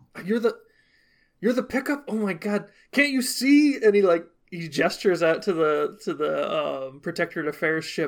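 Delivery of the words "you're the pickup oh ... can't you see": loud stage whisper, much higher. A character looks back at the other ship and speaks to its crew, loud whisper. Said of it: "And he whispers that again".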